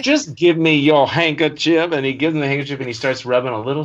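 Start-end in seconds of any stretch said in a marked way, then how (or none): 0.0-1.9 put-on gruff sheriff voice, louder. Retelling a movie scene, quoting the sheriff: imitating Jackie Gleason's sheriff. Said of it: "Jackie Gleason's still in character, he's like".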